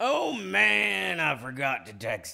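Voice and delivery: high, rough, creaky voice stretching out "man". Retelling a run-in, the speaker tries his own version of the quote: Garrett Morris impression. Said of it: "let me do mine".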